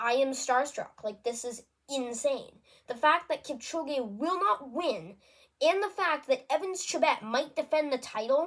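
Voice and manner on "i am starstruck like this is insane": ordinary talk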